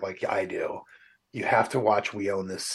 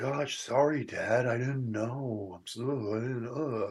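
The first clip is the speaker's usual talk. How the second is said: put-on millennial voice, quieter; 2 semitones higher, 6 dB quieter than usual. Describing an actor's role in a show, imitating a millennial-sounding character. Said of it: "He sounds like a millennial".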